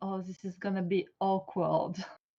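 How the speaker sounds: soft, secret half-whisper, tucked away. After another speaker asks what was said, half-whispering.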